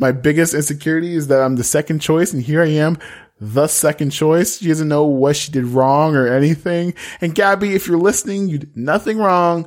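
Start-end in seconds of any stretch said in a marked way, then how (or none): none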